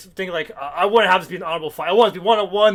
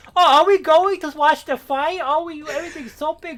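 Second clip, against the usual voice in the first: put-on high, gushing, cliché baby voice; 9 semitones higher than usual. Imitating how the character Nell talks, in Nell's cliche little baby voice. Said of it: "Nell talks like the most cliche little baby voice, like".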